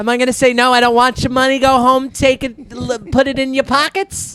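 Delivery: put-on Yiddish-inflected English accent.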